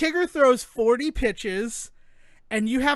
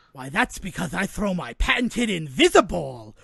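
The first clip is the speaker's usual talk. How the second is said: springy, bouncy, boisterous cartoon tiger voice; 5 semitones lower than usual. Talking about a game's hardest moment, the speaker quotes the character: Tigger voice. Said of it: "I am not going to be able to sleep tonight with that voice in my head".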